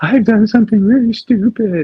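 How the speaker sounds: very high, teary wail, close to crying. A man retells going to his wife for help, imitating near-tearful voice. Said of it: "I go almost into tears".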